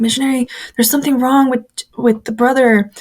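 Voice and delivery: put-on frantic, panicked, urgent pleading tone. Retelling banging on the missionary's door, acting out past panicked pleading. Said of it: "I'm panicking".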